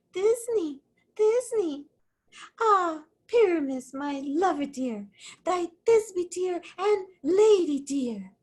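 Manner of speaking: tiny, small, high-pitched little voice. In the play rehearsal, one player offers to play Thisbe too; monstrous little Thisbe voice. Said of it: "I'll speak in a monstrous little voice".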